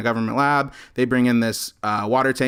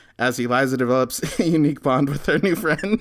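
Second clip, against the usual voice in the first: speech broken up by laughter; 3 semitones higher than usual. Reading a movie synopsis aloud, the speaker is laughing while reading. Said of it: "I'm laughing because".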